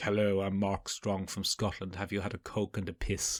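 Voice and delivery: soft, quiet voice, close to the microphone. Imitating Mark Strong in a cinema ad before the film: Mark Strong impression. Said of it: "he's like".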